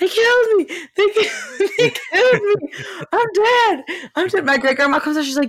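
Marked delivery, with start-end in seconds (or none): 0.0-4.4 acted panicked scream, much higher, slower. Telling a story about him, the speaker acts out his outburst, retelling a panicked scream. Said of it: "he starts screaming".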